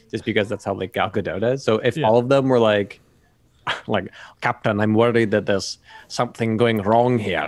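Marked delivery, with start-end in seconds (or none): 4.4-7.5 put-on Russian accent. Imagining the crew as Russian submarine pilots, speak in a Russian accent. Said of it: "this is what Russians sound like when they speak English".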